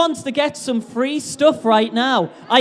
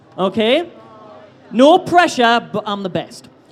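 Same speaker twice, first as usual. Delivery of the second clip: plain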